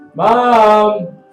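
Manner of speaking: put-on very loud, stretched-out, drawn-out teenage holler. Voicing a teenage boy at a potion stall calling out: teenage boy character. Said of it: "he kind of looks and goes".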